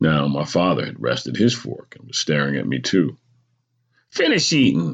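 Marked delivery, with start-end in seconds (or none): 4.1-4.9 curt, sharp, high-pitched snapped delivery. A mother tells her whining son what to do, snapping. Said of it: "my mother snapped".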